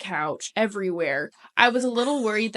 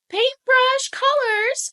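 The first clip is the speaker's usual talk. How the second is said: put-on child's voice, higher and louder. Telling a story about a small child, the speaker acts out his words in an imitation of a little kid voice. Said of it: "your imitation of his voice is so spot on".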